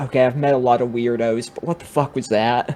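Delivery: half-whispered under the breath, to self. Leaning forward on a desk as a guy leaves, half-whispering to oneself. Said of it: "whispering to myself".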